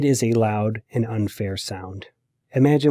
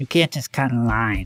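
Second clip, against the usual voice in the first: irritating nasal mocking voice. Retelling a bully mimicking the narrator: irritating nasal mocking voice. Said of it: "repeated in an irritating nasal voice".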